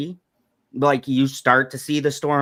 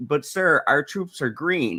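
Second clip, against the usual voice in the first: plain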